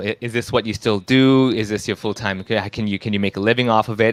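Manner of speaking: ordinary delivery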